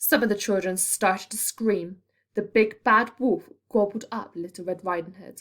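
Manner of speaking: ordinary delivery, nothing marked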